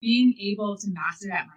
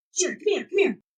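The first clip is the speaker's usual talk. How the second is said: mock yelling, thick New York accent, loud, excited, brash; 6 semitones higher than usual. Like someone doing an impression of their dad hollering through the house at dawn in a broad city accent. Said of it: "My dad has a really thick New York accent".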